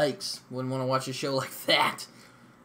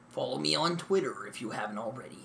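put-on broadcast announcer voice; 5 dB quieter than usual. Speaker jokingly plugs their account for fun: announcer voice. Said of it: "I just like using announcer voice".

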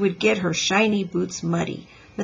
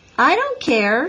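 happy, carefree, cheerful, high-pitched voice; 6 semitones higher, 4 dB louder than usual. A girl answers a traffic boy who told her to wait: happily. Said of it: "said Ramona happily".

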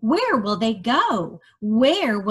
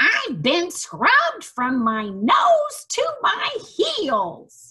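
high-pitched, squealy farmyard pig voice; 9 semitones higher than usual. Reading a story aloud, voicing the pig in a squealing pig voice. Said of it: "The pig squealed".

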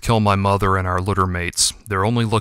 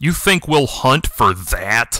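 contemptuous, derisive scoffing; 3 semitones higher than usual. A shadowy voice answers Yuki about his brother, scoffing. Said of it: "scoffed the shadowy voice".

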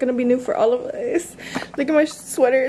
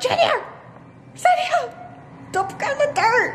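high shouted yelling. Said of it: "why I'm yelling on the sidelines".

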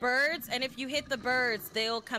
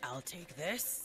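very soft, very deep put-on bass character voice; 7 semitones lower, 10 dB quieter than usual. Playing a game, the speaker imitates another player's character in a put-on deep voice. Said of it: "your character's got a nice deep voice".

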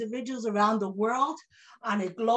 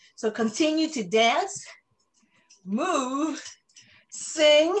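short of breath, with words drawn out; 3 semitones higher, 3 dB louder than usual. Host addressing members during an online fundraising event, out of breath. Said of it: "and I'm out of breath".

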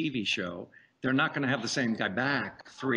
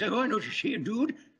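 put-on very high-pitched old Western cowboy voice; 10 semitones higher than usual. Showing a voice done for an old cowboy role: old western guy voice. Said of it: "old, old Western guys".

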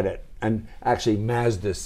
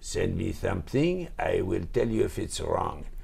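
put-on heavy French accent, male voice; 3 semitones lower, 6 dB quieter than usual. Quoting the standard brief that Gone used to give, imitating Gone's heavy French accent. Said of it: "Gone has a heavy French accent".

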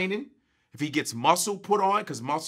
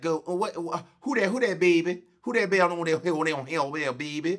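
put-on Louisiana woman's accent. Retelling what a Louisiana woman said to the speaker, in a Louisiana accent. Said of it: "I met a Louisiana chick. And she be like".

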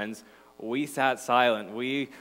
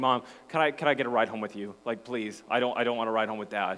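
absolute, hard pleading and begging; 3 semitones lower than usual. Retelling what was said to mom before a hockey game: imitating own past pleading. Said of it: "absolutely pleading with her, begging her".

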